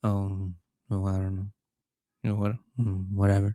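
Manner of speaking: completely monotone. Imitating a man's reply about a Christmas party, completely monotone. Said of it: "he's completely monotone about everything".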